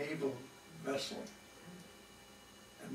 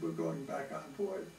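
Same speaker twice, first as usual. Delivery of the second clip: ordinary delivery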